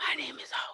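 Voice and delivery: breathy, forceful, pushed-out stage whisper. Speaker demonstrates the line for the other person, in a loud whisper. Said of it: "just just whisper really loudly".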